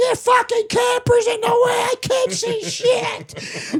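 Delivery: put-on very high, furious hollering yell. Retelling how the neighbor yelled about a camper: imitating a neighbor yelling. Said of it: "She's yelling out the door".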